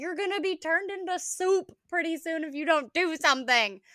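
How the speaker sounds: loud, high-pitched screaming. Retelling screaming at the roosters, reenacting the screaming. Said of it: "I'm screaming in there".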